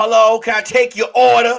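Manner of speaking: put-on rude voice with attitude. Retelling a drive-through order at the machine: imitating a worker with attitude. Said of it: "your attitude starts at the goddamn".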